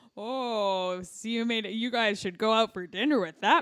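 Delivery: mocking, sarcastic put-on rant. Retelling how a woman reacted to their eight-cent earnings, imitating a sarcastic rant. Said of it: "this sarcastic rant".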